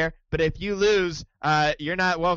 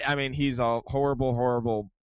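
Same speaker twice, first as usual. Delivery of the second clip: plain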